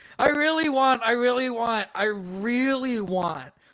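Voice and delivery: ordinary talk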